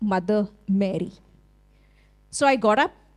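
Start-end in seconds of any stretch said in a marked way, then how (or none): 0.0-1.1 put-on severe, very stern voice. Speaker retells being woken by God calling out, imitating God's very stern voice. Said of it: "But very stern voice".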